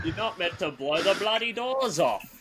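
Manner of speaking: high voice through nose. Doing a quoted film line: Michael Caine voice. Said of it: "He's very nasal".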